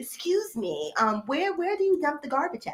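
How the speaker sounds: courteous, polite customer service voice. Not knowing where to empty the garbage, asking in a put-on customer service voice. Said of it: "I put on my, you know, customer service voice".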